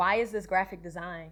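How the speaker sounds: plain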